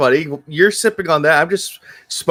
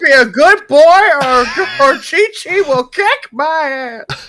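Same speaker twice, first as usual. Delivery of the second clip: very high cartoon sidekick voice; 9 semitones higher than usual. Describing another version's take on Krillin; Krillin voice. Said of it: "that's essentially what their form of Krillin was".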